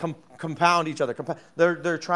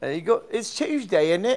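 fake, mocking British accent; 4 semitones higher than usual. Joking with a co-host about bringing someone on, in a put-on british accent. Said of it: "the only way I know how to use a British accent".

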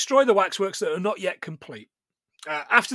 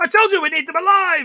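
put-on very high, loud, unhinged raging outburst; 10 semitones higher, 6 dB louder than usual. Retelling a film scene where the character goes mad: imitating David Warner going mad. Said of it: "David Warner goes mad".

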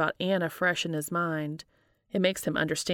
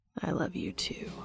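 soft, low, whispered rumbling murmur; 6 dB quieter than usual. Holding him from behind afterwards, Cass answers his confession of love, soft rumble. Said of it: "Cass softly rumbles out".

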